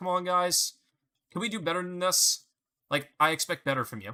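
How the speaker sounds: mock chill, mildly disappointed parent tone. Describing how Arlo gets annoyed with the team; imitating Arlo as a disappointed parent. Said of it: "like how like a disappointed parent would get".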